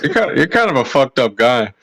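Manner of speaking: loud call projected across the room. Calling out to a nice boy from far away: yelling across the room. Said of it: "are you yelling that from all the way over there?".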